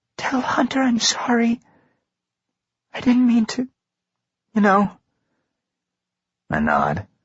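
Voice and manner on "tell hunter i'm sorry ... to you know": very high, voiced stage whisper. Reading a story where a character leans to the screen door: half-whispering. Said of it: "leans forward so that her face is almost touching the screen and whispers".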